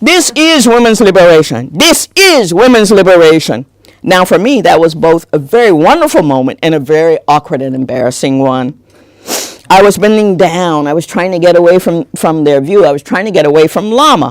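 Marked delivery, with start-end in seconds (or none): 0.0-3.7 booming, resounding, acted-out call. Retell how he called to all of them, pointing at you, imitating a booming voice. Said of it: "In a booming vo- voice".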